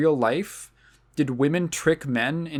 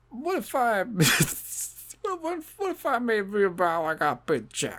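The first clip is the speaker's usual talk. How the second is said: drawn-out, wondering, swooping comic musing, pitched up; 6 semitones higher than usual. Responding to a feminist film in a put-on voice: Bill Cosby voice. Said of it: "I'll stick with Bill Cosby".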